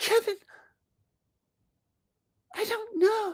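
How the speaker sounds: put-on girl voice, pitched very high. Acting out a prom scene like The Wonder Years, Winnie Cooper voice. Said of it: "Winnie Cooper impression as me".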